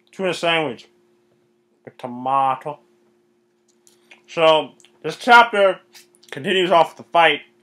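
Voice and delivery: mouth full, eating while talking. Summarizing a manga chapter, eating while talking. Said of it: "I'm sorry, I'm eating".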